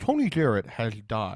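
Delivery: slow, wet, slurpy, close-mic voice. Imitating how Dyer talks right up close to the mic: Dyer's wet close-mic voice. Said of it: "she gets real close to the mic and puts as much fluid in her mouth as possible".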